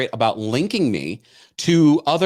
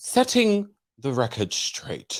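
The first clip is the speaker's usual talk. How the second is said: soft, put-on English-accented announcer-like delivery; 3 semitones lower, 5 dB quieter than usual. Quoting her weekend social media post, in a Lisa Vanderpump voice with a put-on English accent. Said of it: "should I put on an English accent?".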